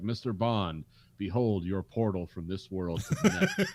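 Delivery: totally straight, unironic delivery. Quoting Drax's airlock line from the movie: deadpan Drax impression. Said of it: "just straight face".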